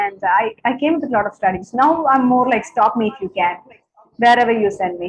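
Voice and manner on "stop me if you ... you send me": ordinary talk, nothing marked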